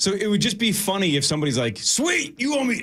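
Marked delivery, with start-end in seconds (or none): 1.8-2.8 squeaky, very high-pitched voice. Acting out somebody in a bet to the person you are talking to, imitating the listener's voice. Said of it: "I don't know why I'm doing your voice".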